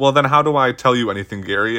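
plain

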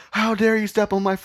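mock crying, very high-pitched. Retelling how a barefoot man complained after someone stepped on his foot: imitating someone crying. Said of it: "basically started crying".

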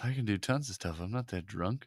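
spot-on low, deep put-on voice. Imitating the other speaker's voice after they spoke, imitating co-host's voice. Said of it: "Was that me just saying that?".

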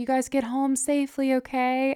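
high, sugary, sweetest little voice. Retelling what a man said while walking away, imitating the sweetest voice. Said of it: "he said with the sweetest voice".

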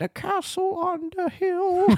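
very high, drawn-out storytelling voice. Quoting a film's opening narration while discussing the film: imitating Winona Ryder. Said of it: "we get the Winona Ryder".

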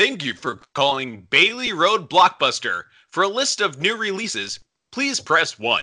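telephone announcer voice. Retelling how he answered the Blockbuster store phone, in a Moviefone voice. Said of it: "They called it my movie phone voice".

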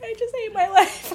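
high-pitched, laughing, self-pitying tone.

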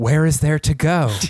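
mock earnest, wistful, melancholy delivery. Retelling an on-screen scene where a woman answers a man: mock-earnest, melancholy. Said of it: "she delivered that line so earnestly and with such like, incredible sort of melancholy".

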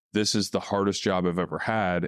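ordinary talk

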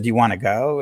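ordinary talk

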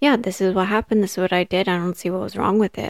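normal talking voice

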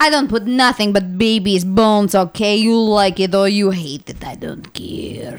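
put-on Russian accent. Joking about going to church at Christmas, the speaker slips into a put-on Russian accent. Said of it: "I talk like this".

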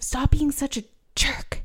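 very quiet, soft, breathy, almost whispered. Discussing a show, the speaker quotes a woman telling off Nathan, imitating her saying it quietly. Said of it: "she like says it so quietly".

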